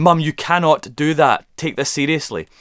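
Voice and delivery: mock stern, firm scolding tone. Retelling stopping a helper on stage: retelling a telling-off. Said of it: "not liking to be told off".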